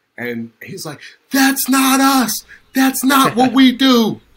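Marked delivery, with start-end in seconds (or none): 1.4-4.2 booming, shrill, very high, very loud, drawn-out yell. Retelling the coach's only outburst over a near penalty: imitating Tony Dungy yelling. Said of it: "that's the only time I ever heard him yell".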